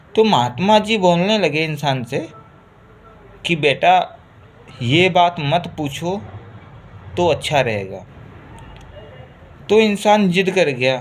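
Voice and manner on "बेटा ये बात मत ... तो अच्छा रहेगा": ordinary delivery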